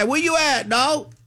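very high, belted mock yell. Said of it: "that's why you yell".

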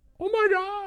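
high-pitched stunned "oh my god". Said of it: "and you're like".

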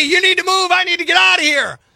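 fuming angry yell, pitched high. Retelling how a fuming driver blocked in: imitating someone yelling. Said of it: "yelling at me".

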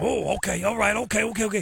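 put-on bad Cajun man accent, low, creaky.

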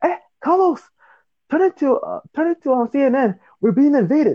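shrill, high-pitched scream. Retelling a dream where mom calls out about an invasion: imitating mom screaming.

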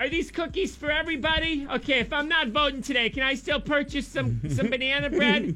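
high, soft office lady voice.

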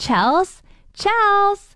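put-on yell, loud and carrying.

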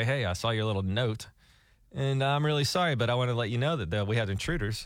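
plain

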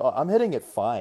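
ordinary talk, nothing marked

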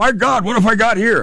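very high, fake, bad Australian accent. Recounting a tour guide's words during a crocodile attack, bad Australian accent. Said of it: "I'm not good at an Australian accent".

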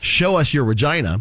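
normal talking voice

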